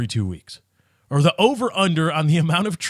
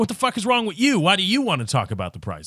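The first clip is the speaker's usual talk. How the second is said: imitated, mock accusatory tone; 3 semitones higher than usual. Retelling how a car salesman looked at the buyer: imitating an accusatory tone.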